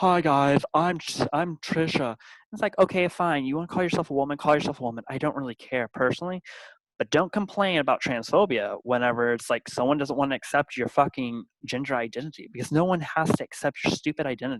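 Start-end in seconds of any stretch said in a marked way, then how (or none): 0.0-2.1 very slow, deliberate, drawn-out speech. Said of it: "they talk like this".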